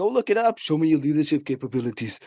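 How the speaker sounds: fake Austrian-accented English. Retelling how he answers coworkers' questions at work: put-on accent. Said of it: "I started saying that at work now to everybody in the in the accent".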